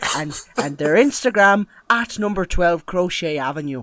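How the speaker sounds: put-on Irish accent. Thanking patrons and plugging a shop on the podcast, in an Irish accent. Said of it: "I've gone Irish".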